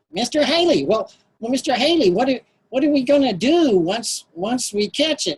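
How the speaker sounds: put-on high, nasal, boyish kid voice. Retelling what he asked mister haley as a boy, own nasal boyhood voice. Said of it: "and I'm in my nasal sort of voice".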